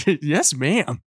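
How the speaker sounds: acted-out, put-on excited tone. Retelling her dad's test, the speaker imitates his reply to the yelling lady: imitating an excited reply. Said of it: "you make him sound excited".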